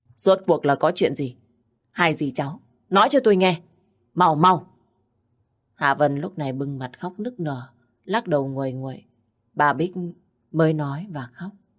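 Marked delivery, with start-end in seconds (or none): 0.2-4.7 annoyed, irritable, pressing, insistent voice. Mr. Minh questions a crying aunt and niece who cannot speak, irritably. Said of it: "Ông Minh bực bội hỏi tiếp".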